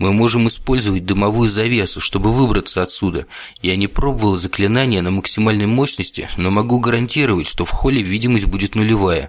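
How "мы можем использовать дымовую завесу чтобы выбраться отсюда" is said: plain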